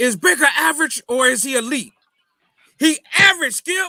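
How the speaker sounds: very high, loud put-on debater voice. Asking whether a quarterback is average or elite, the speaker does a Shannon Sharpe impression. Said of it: "I'm gonna say it like Shannon Sharp".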